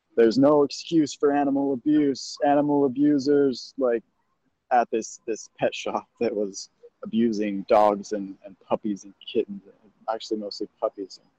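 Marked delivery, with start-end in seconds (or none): 0.2-3.8 all-out scream, high-pitched, at top of lungs. Retelling what was screamed at a pet shop: imitating screaming at the top of lungs. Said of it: "I was screaming at the top of my lungs".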